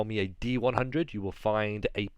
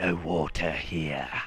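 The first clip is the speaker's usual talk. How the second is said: grotesque, gruff, low lizard-folk creature voice; 6 semitones lower than usual. A game master voices the lizard folk answering the players, grotesque gruff lizard-folk voice. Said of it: "says in a very grotesque, gruff voice".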